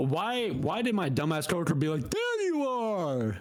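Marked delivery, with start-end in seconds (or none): 2.1-3.4 loud shout at a very high pitch. Retelling what a coworker called out: imitating a coworker's loud call. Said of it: "loud as shit".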